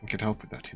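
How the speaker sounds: very quiet, breathy, barely-there whispered murmur. Voicing a character who offers a player help: very quiet voice. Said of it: "his voice is very quiet".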